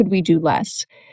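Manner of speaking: ordinary delivery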